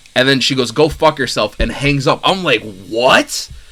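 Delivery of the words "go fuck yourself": mock rude snapping, attitude-filled tone. Retelling a phone call where a woman hung up on him, mock-rude snapping retort. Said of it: "she was getting like attitude with me".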